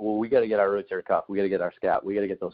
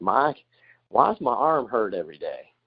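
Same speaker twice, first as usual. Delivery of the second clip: put-on slow, drawn-out Texas accent with stretched vowels. Retelling a clubhouse joke, imitating a teammate: Josh Beckett Texas accent. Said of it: "he'd have that Texas accent and be like".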